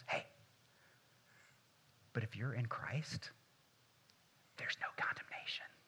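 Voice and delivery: hushed, very quiet, barely audible whisper. Acting out the letter turning the corner after seven chapters: whispering. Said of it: "he whispers".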